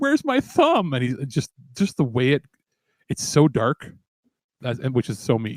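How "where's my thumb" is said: mock, very high-pitched blubbering sob and wail. Retelling a funny movie scene: imitating a character crying. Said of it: "he just starts crying".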